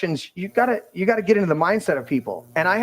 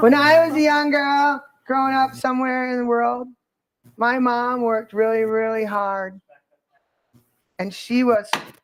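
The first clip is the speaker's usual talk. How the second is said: put-on valley girl voice, higher; 6 semitones higher than usual. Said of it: "Valley Girl".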